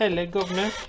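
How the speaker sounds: put-on, fake British accent. Joking about british accents after apologizing to british viewers: put-on british accent. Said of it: "I wish I had a British accent".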